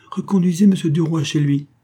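high voice calling out. A woman calls out to her coachman after stepping down, crying out. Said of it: "elle cria à son cocher".

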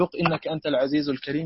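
ordinary talk

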